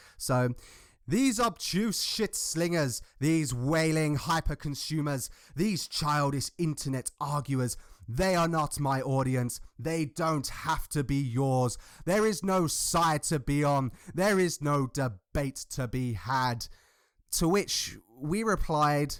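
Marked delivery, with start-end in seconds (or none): 1.1-16.7 theatrical Shakespearean stage-actor delivery. Quoting another person's written statement aloud, in a best shakespearean voice. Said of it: "my best Shakespearean voice".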